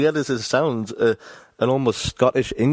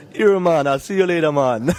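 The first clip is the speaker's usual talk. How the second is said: terrible, poorly attempted put-on Jamaican accent; 5 semitones higher, 3 dB louder than usual. Asked to say goodbye in a jamaican accent, terrible jamaican accent. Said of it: "say goodbye in a Jamaican accent".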